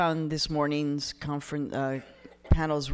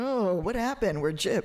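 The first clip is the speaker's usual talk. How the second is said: put-on high, let-down, cheated-sounding disappointment; 5 semitones higher than usual. Retelling how people react when they meet the speaker: imitating upset people. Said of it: "they're very upset when they meet me".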